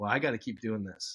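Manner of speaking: normal talking voice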